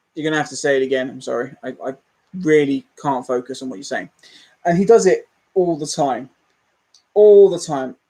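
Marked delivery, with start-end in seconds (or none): none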